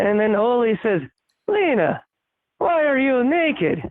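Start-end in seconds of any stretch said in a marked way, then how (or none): 1.5-3.8 put-on Scandinavian accent, pitched higher. Telling a joke in character as Oli: Scandinavian accent. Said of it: "slip into, uh, to the Scandinavian kinda accent".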